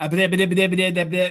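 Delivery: the same bit repeated over and over. Answering a viewer who asks for a cartoon voice: Porky Pig voice. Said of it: "that's about my best Porky Pig I can do".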